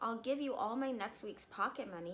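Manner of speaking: ordinary delivery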